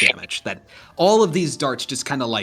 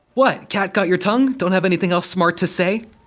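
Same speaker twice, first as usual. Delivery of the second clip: high, swooping, mocking taunting shout; 6 semitones higher than usual. A game master voices Abba on her turn, calling out to a player's character: Abba's taunting shout. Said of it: "shouts out to you".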